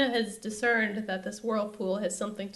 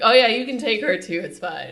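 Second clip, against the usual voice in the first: very loud, offhand, tossed-off delivery; 9 dB louder than usual. Retelling a TV scene where Poseidon answers Xena: imitating Poseidon. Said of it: "he literally sounded like that".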